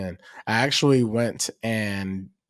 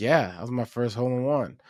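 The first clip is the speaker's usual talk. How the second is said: put-on stoic, impassive man's voice; 2 semitones higher than usual. Retelling an older man's reply after his hole in one: imitating a stoic man. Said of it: "he was the most stoic person I've ever met".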